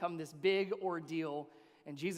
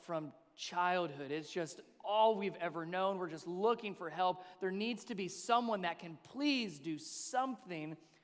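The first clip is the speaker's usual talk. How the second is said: ordinary delivery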